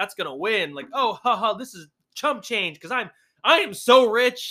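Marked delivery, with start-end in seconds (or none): 0.9-4.5 mocking over-the-top rich voice, much slower. Mocking how rich people talk about money, mocking an over-the-top rich person. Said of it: "they're just like".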